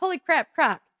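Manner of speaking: high, loud, excited tone. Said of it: "Tyler being like".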